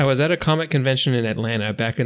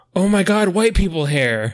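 put-on, extremely loud, shrill outcry; 6 semitones higher, 5 dB louder than usual. Retelling what a woman said holding up a napkin: retold loud voice. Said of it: "says in a traumatizing loud voice".

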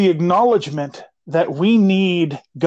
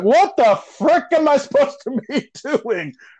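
desperate, pleading, lost cry, pitched up; 10 semitones higher than usual. Preaching, acting out how we cry out to the lord. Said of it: "We cry out".

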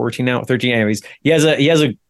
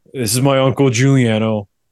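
put-on mumbling young teenage voice. Retelling how a 13-year-old introduced his uncle: mumbling like Matthew. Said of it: "so he's like mumbles".

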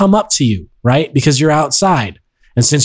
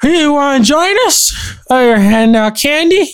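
put-on acted-out slurring, voice pitched very high; 11 semitones higher than usual. Describing parents taking kids door to door at Halloween, imitating slurred words. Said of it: "slurring their words".

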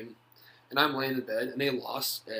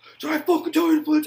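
very loud, very high screaming tirade; 12 dB louder than usual. Retelling being yelled at during a practice walkthrough: imitating someone screaming. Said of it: "he's just screaming at me".

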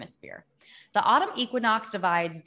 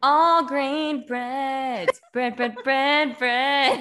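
ad announcer voice, much higher; 5 semitones higher, 6 dB louder than usual. Reading a list aloud to co-hosts, in a commercial announcer voice. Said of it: "Sounded like a commercial".

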